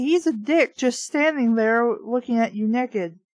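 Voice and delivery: ordinary talk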